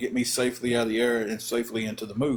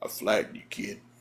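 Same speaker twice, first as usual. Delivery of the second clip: low, heavy, big deep voice; 2 semitones lower, 4 dB quieter than usual. Retelling what a man on top of him said, big deep voice. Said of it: "And that big old deep voice, he goes".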